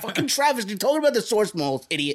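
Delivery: put-on yelling. Retelling yelling at the phone while listening: retelling own yelling. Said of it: "yelling at my phone".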